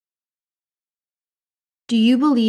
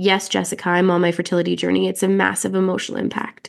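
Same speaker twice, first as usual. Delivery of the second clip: normal talking voice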